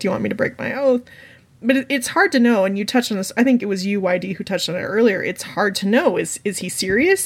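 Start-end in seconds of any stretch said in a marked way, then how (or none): 0.0-1.0 taunting, jeering, mocking delivery. Retelling a book scene, answering Brienne: imitating Jaime mocking. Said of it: "Jaime gets kind of mocking".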